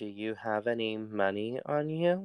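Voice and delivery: very quiet and hushed, kept under the breath. In a tabletop scene at crossbow point, a character asks a companion, very quietly. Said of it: "very quietly".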